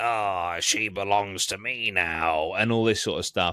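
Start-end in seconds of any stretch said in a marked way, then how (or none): 0.0-2.5 slow, dragged-out, distorted, warped possessed voice. Retelling a therapist writhing against a wall as if possessed, in a distorted possessed voice. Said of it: "with like a, a distorted voice".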